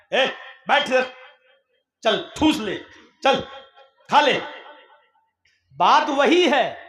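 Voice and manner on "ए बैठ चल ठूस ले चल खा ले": curt, crude, dismissive tone. Speaker contrasting a polite phrasing with a changed tone: rude, dismissive tone. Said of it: "लहजा change है".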